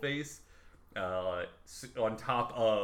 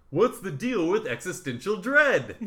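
very high, loud, belted stand-up comedy delivery; 11 semitones higher, 10 dB louder than usual. Asking a what's-the-deal question in an impression: Seinfeld voice. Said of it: "Says in a Seinfeld voice, ... That was my best".

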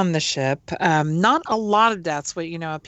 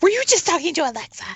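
high, fast, incredulous voice. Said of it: "your coworker walks by and says".

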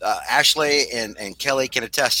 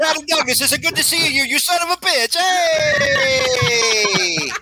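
put-on Italian accent, pitched higher. Greeting Brad Douglas in cosplay: Italian Kevin Feige voice. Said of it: "Italian Kevin Feige from the multiverse".

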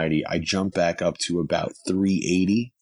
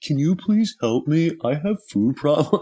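mock, very high, on the verge of crying; 9 semitones higher than usual. Retelling begging a woman for help at a backyard comedy show, retelling almost crying. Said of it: "almost crying".

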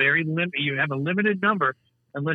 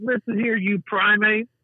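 put-on scream, higher; 7 semitones higher than usual. Retelling a movie scene where the hero yells at enemies: imitating someone screaming. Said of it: "just fucking screaming at them like".

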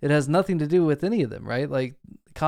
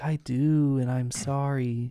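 put-on very slow, sweet, innocent little kid voice. Quoting a scary line from a show: sweet little innocent kid voice. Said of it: "In that sweet little, like, innocent kid voice".

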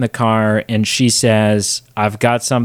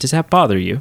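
cheeky, needling, smart-aleck tone; 3 semitones higher than usual. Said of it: "just being just a smart ass".

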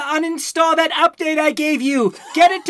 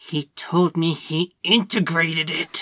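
words forced through gritted, clenched teeth; 11 semitones lower, 7 dB quieter than usual. Voicing a character who reports what he was told, through gritted teeth. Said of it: "Through gritted teeth".

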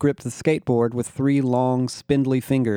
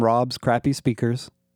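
plain

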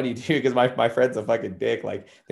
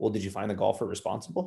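mock-calm, put-on calm delivery; 2 semitones lower, 7 dB quieter than usual. Retelling what a golf course worker asked her, imitating someone sounding calm. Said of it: "He just approaches her like really calmly and he's like".

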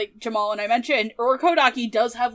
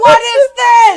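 frantic outburst, pitched higher and louder; 12 semitones higher, 13 dB louder than usual. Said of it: "losing his shit".

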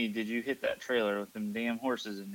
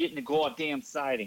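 put-on attempt at a Boston accent; 4 semitones higher than usual. Trying out a best attempt at a line in a put-on Boston accent. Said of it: "That was my best Boston accent".

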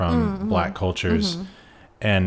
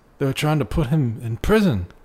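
put-on Southern US drawl, pitched higher; 7 semitones higher than usual. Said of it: "my best [name] impression".

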